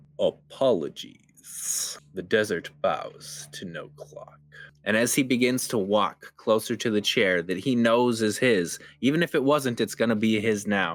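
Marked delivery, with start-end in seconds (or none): 0.2-4.4 slow, drawn-out, menacing, intimidating whisper. Voicing a man who bursts into the room: slow, intimidating tone. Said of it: "in a very slow but very intimidating or intentional tone".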